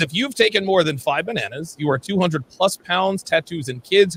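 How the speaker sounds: normal talking voice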